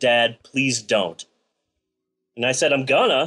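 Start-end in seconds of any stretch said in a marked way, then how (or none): 0.0-1.2 mock embarrassed young female voice, lower, slower. Father retelling his eldest daughter's reply, imitating embarrassed daughter. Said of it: "she just got all embarrassed and rolled her eyes and said".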